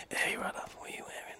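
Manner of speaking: hushed, sultry, breathy whisper. Dan goes on a brief tangent on the show, in a sex line voice. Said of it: "might start a sex line voice".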